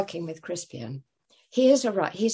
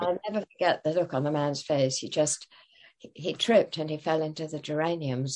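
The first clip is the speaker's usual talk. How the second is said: ordinary talk, nothing marked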